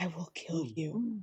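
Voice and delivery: slow, drawn-out, hushed half-whisper. Speaking in character to a wall after hearing skittering inside: half-whispering. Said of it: "She whispers to the wall".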